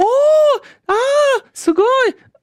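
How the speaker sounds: very high, very slow, drawn-out, delighted, euphoric cooing. Imitating an assistant who keeps making euphoric noises, mock-euphoric. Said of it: "Die dann die ganze Zeit euphorische Geräusche von sich gibt. Immer so".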